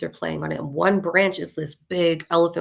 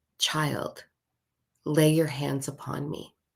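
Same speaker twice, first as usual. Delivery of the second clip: very deep voice, quieter; 2 semitones lower, 4 dB quieter than usual. Retelling how a willow tree spoke to the speaker, deep tree voice. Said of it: "the willow tree is talking in this deep, deep, deep voice".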